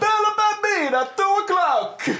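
very high, top-of-the-lungs fake Italian accent yell. Speaker recounting a moment from a movie trailer, Nicolas Cage shouting in fakey Italian accent. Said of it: "shouts at the top of his lungs in a fakey Italian accent".

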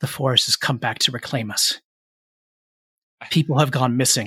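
hushed stage whisper. A game narrator voices a man warning the group, in a hushed half-whisper. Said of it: "says in a hushed whisper".

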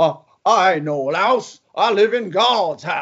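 put-on cartoon rooster voice. Speaker retells what a man on the boat said, Foghorn Leghorn impression. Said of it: "he sounded a little bit more like Foghorn Leghorn".

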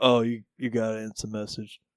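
put-on bored delivery. Retelling how a library extra announced a message: imitating a bored delivery. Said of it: "He just said it so, like, bored".

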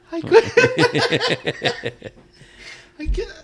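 breathless laughter, whispered and very slow. Trying to speak during a laughing fit, out of breath from laughing. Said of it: "I was out of breath from laughing".

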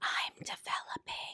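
very quiet, breathy whisper. Retelling what a girl in class leaned over and said: imitating a whisper. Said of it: "why are you whispering that to me".

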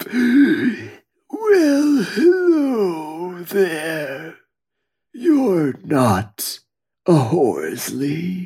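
very slow, rasping dead man's voice. Voicing a dead man who greets a lost visitor: slow raspy voice. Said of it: "the slow, raspy voice that follows".

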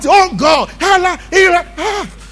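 loud, high-pitched shouting. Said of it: "The guy will just shout".

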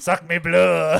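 bad put-on French accent. Claiming to show exactly how it's said in French, bad French accent. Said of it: "I don't even think I got that good of a French accent".

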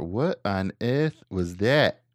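slow, drawn-out, fake put-on Australian accent. Quoting a witness who heard a bang: put-on Australian accent. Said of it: "That's my Australian accent".

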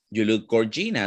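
ordinary delivery

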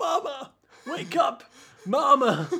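put-on whimpering, high, slow old-man baby voice. Retelling a scene where an aged baby calls its mother: old man baby voice. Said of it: "an old man baby is like".

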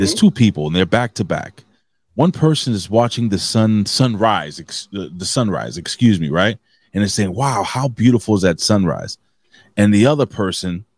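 normal talking voice

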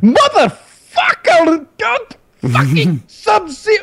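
put-on very high, slow, drawn-out angry drunk voice. Retelling how a drunk roommate yelled after losing game after game: imitating an angry drunk roommate. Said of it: "he's getting pissed".

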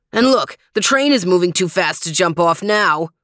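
plain reading voice

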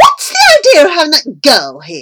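very loud, raging, furious shout. A woman in a rage shouts at a man downstairs: shouted in a rage. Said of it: "she shouted at Granger".

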